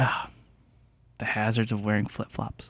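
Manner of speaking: soft muttering to oneself under the breath. Retelling what someone said after a chair bumped his ankle: imitating Matt muttering under his breath. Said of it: "under his breath, he muttered".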